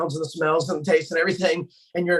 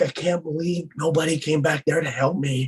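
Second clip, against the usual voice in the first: mock-crying, put-on tearful, whining voice. Retelling what an upset friend said after landing, imitating him crying. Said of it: "he's kind of crying".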